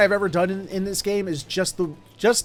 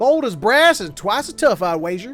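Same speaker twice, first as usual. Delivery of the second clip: put-on southern accent, drawled over the phrase; 2 semitones higher, 4 dB louder than usual. Repeating a game character's line with delight: put-on southern accent. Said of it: "this guy's got a southern accent".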